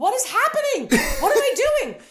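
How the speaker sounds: put-on very high, swooping, flustered, panicked voice. Retelling an audition going wrong, retelling panicked confusion. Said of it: "and I'm just panicking".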